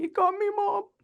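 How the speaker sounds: very high-pitched crying voice. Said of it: "And he's, like, crying".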